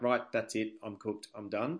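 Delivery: ordinary talk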